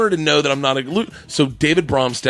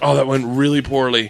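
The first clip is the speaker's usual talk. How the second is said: ordinary talk, nothing marked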